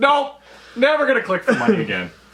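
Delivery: swooping, sing-song character voice. Describing how corp players act now: corp player impression. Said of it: "That's my corp impression".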